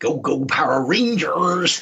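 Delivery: put-on Plymouth accent, drawn right out, very slow. Retelling how a godson cheered for Power Rangers: imitating a Plymouth accent. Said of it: "with his Plymouth accent".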